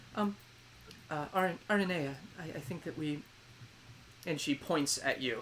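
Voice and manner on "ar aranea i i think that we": quiet, timid, hesitant, halting stammer. Voicing the quieter twin interrupting her sister: quiet hesitant twin voice. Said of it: "the quieter, this one that was smiling at you just kinda goes".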